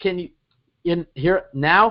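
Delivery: glitchy, broken-up audio. Imitating how a caller's words came through a bad line: imitating a glitchy voice. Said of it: "But it's like".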